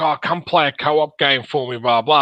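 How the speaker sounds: normal talking voice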